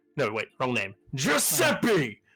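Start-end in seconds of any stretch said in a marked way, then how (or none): 1.2-2.1 calling out loudly. Voicing a character who leans back and shouts for a worker: NPC shouting a name. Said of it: "literally just shouts into us when he goes".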